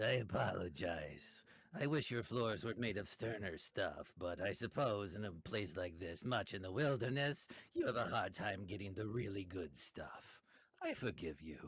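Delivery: put-on French-accented character voice. Game master voicing a character speaking to the players, french accent. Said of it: "he's French".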